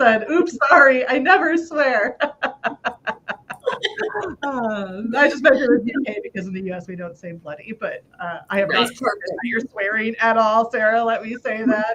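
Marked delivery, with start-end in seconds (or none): 0.3-2.2 high-pitched, giggling, reading aloud. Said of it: "I'm laughing".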